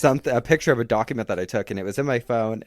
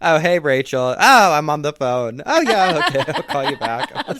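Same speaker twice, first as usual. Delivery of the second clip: loud, chatty conversational voice; 4 semitones higher, 7 dB louder than usual. Retelling how she answered another call mid-conversation: imitating her on the phone. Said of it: "and she's like".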